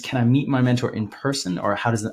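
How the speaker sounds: ordinary delivery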